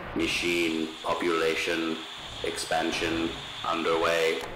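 homemade-sounding synthetic electronic put-on voice. Narrator reads a character announcing to the police, in a home-brewed electronic voice. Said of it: "in his home-brewed electronic voice".

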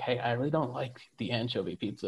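hushed half-whisper, soft, low and confiding. Acting out going up to one person and speaking: half-whispering.

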